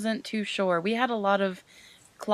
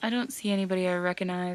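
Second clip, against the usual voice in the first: ordinary talk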